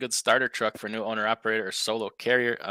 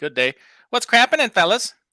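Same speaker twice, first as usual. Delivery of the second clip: very high, loud delivery; 11 semitones higher, 8 dB louder than usual. Speaker greets the fellas in his impersonation: Uncle BOC impression. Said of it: "That's my B O C impersonation".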